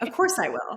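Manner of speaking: put-on self-assured, sure, confident tone. Retelling a talk with a dad about paying for college: imitating own confident past self. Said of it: "I said it so confidently".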